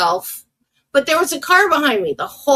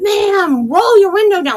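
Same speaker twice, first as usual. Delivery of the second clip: high-pitched, screaming yell; 7 semitones higher than usual. Telling how the man who stopped her car called out: retelling a scream. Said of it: "like he's screaming".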